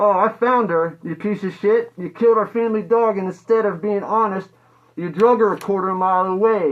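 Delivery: acted, furious full-rage cursing outburst. Retelling laying the dead dog at their feet: reenacting an angry outburst. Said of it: "I was very mad".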